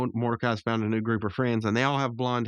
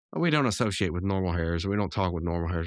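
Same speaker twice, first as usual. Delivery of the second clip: ordinary talk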